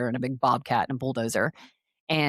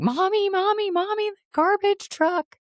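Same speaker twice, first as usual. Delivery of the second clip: put-on very high, thrilled kid's yell; 3 dB louder than usual. Retelling how the son shouted from the hotel balcony, imitating a child screaming. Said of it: "He'd start screaming".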